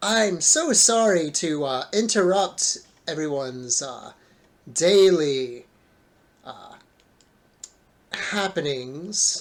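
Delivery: slow, booming voice carrying far. Game master voicing a voice heard across the landscape, booming Evil Wizard Man voice. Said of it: "unwanted voice boom across the landscape".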